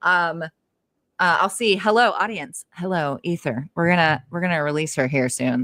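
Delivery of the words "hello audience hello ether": put-on radio announcer voice, slower. Greeting the audience and the ether, in a mock radio announcer voice. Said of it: "the radio voice right now".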